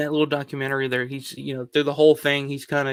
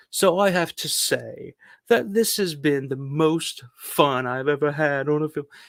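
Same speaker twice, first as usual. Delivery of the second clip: horribly done, fake put-on British accent. Retelling the end of a documentary, the speaker quotes a man in a fake british accent. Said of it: "I'm gonna do my fake British accent".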